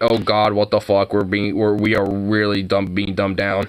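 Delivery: plain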